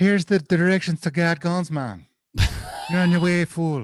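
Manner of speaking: put-on high Irish-accented voice. Friends joke about asking a phone for directions; Siri with Irish accent. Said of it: "Siri is actually an uh, is an Irish dude".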